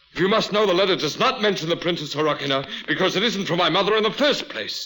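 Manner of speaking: yelling outburst. In a drama, Alexei answers Anna about a letter, shouting. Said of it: "you're shouting at me".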